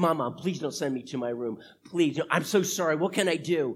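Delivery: acted, earnest, pleading, begging voice. Retelling begging their mom not to send them to their room, imitating begging. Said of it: "So I begged and I pleaded".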